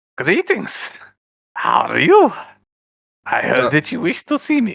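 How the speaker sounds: put-on German-accented voice. Voicing a doctor character greeting the players: German accent. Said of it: "a German doctor?".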